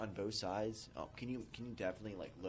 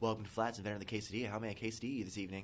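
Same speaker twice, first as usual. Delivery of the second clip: rattled off very fast, all in one breath. Retelling how he greeted customers at Flats: saying it really fast. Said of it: "I would say really fast".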